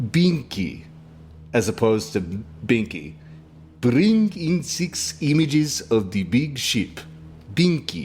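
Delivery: Russian-accented speech. Doing vocal warm-ups for a bit, in a Russian accent. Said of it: "Your vocal warm ups for your Russian accent?".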